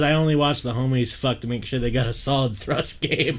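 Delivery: ordinary talk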